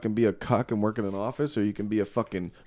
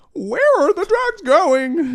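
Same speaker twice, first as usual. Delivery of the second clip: squeaky bat voice, much higher, slower; 8 dB louder than usual. Friend recounting someone trying out bat voices, high-pitched bat voice. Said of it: "like high pitched, like a bat".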